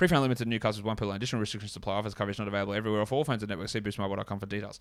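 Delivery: rapid-fire, rattled-off radio-ad small print voice. Showing how radio ads read terms and conditions: reading terms incredibly quickly. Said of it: "does the person read them incredibly quickly".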